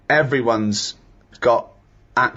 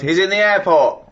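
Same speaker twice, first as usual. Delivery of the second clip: mock, high, furious, angry shout; 7 semitones higher, 4 dB louder than usual. Retelling shouting at a loud phone talker in the airport, retelling an angry shout. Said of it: "and I shouted".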